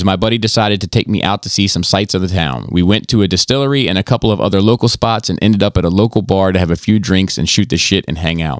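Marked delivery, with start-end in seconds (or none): none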